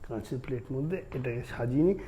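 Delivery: ordinary talk, nothing marked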